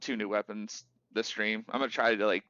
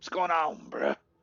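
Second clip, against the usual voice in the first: high, put-on bro-dude voice; 7 semitones higher than usual. Opening a video with a joke greeting: put-on Chad voice. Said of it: "the Chad thing where it's like".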